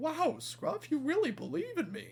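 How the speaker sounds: very high, very soft, hushed, bashful gush. Retelling a story where one character praises Whiff, put-on blushing Whiff voice. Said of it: "Whiff is just blushing".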